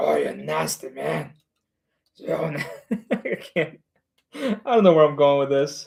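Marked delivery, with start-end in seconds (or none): 0.0-1.3 rough, creaky, croaking monster voice. Speaker repeats a line said to a friend, in a demogorgon voice. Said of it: "you say like one of those like demogorgons".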